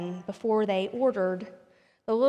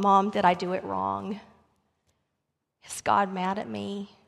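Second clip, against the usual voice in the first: mock tearful, crying boy voice. Retelling a story where a boy asks his mother: imitating a crying boy. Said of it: "he began to cry".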